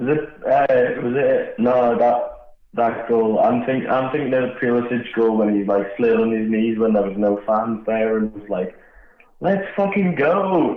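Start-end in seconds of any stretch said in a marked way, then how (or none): 9.4-10.8 put-on heavy American accent, pitched up. Retelling a goal celebration, imitating Pulisic: most American accent. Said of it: "in the most American accent".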